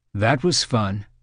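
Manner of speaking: plain reading voice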